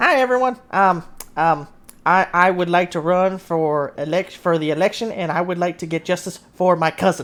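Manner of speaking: halting, stammering goblin voice, tripping over words. Voicing a goblin asking to run for the election: goblin voice. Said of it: "he looks back at everyone and he's like".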